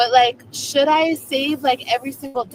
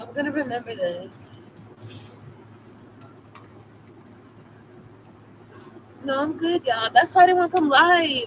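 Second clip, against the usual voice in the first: crying while talking, tearful. Thanking viewers for a donation on a live stream, crying while talking. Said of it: "I already knew I was gonna cry like this".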